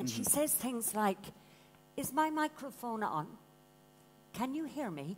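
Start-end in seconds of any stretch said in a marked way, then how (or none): 2.0-5.2 mock flat, deadpan delivery. Quoting an articulate young girl, imitating deadpan delivery. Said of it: "she's very deadpan".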